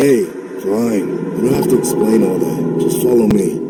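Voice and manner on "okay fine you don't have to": ordinary delivery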